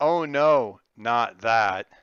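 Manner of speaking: very loud, completely flat, expressionless deadpan. A narrator voices two characters' joint reply to a threat, completely deadpan. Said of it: "they both say completely deadpan".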